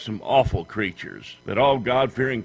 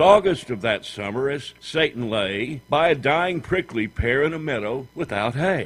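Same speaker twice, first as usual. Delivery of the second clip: usual speaking voice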